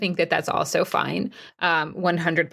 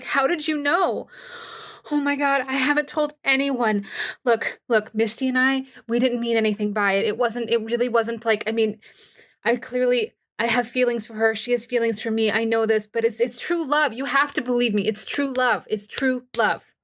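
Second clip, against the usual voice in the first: high, tearful, breaking down crying, begging, pleading voice; 5 semitones higher than usual. A woman looks at the player and suddenly breaks down; breaking down in tears. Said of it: "all of a sudden breaks down into tears".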